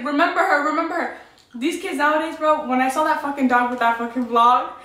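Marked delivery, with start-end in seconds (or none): 0.0-1.2 play-acted pleading scream, held back, mild yell. Retelling watching a TV episode, imitating own past screaming.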